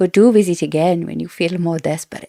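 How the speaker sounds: put-on South American accent. Quoting Queen Marlies from the audiobook: Queen Marlies South American accent. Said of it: "I really like her accent for Queen Marlies".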